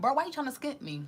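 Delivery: indignant call-out.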